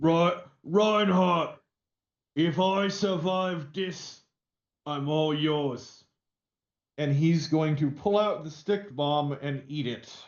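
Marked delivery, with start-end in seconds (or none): 0.0-6.0 slow, drawn-out orc voice. In a tabletop game, the orc shouts to another character, shouting in an orc voice. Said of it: "the orc is going to shout out in [name]'s best orky voice".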